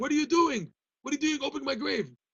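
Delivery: mock shrill, very high, loud screaming. Retelling a story of someone in a grave calling out: imitating a scream.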